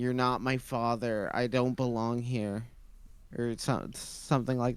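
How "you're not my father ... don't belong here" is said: plain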